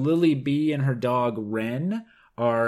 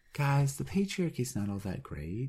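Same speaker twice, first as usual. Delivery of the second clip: fake-cheerful, nicer tone with sing-song swings; 9 dB quieter than usual. Joking about a reviewer who wants the lecture upbeat: mock upbeat lecture. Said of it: "He'd like a more upbeat lecture".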